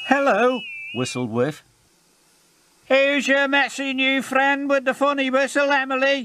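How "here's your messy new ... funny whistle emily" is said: loud, very high, mocking snorting jeer. A character in a siding, laughing at a newcomer, speaks with a snort. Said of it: "snorted James".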